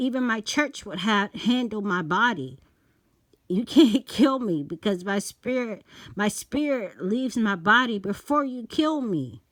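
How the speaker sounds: called out, mildly shouted. Retelling yelling a verse at a man waiting outside. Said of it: "I'm yelling this to him".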